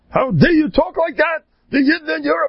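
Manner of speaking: put-on high screaming outburst in an old voice.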